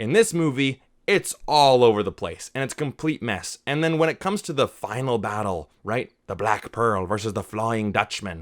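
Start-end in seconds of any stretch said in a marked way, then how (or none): 6.3-8.4 put-on swashbuckling pirate voice. Reviewing a pirate movie's final battle between two ships; pirate voice. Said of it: "I gotta use my pirate voices for that".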